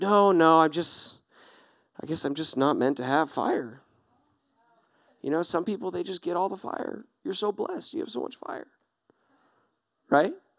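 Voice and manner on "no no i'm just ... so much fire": slow, dejected, put-on all-sad voice. Acting out someone whose fire went out, turning down help: acting sad. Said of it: "And I'm just all sad".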